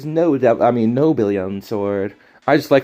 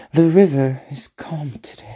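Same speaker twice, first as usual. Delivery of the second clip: whispery female character voice; 3 semitones higher than usual. Speaker tries out a voice for a second game character: whispery Oichi voice. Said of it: "she's very whispery".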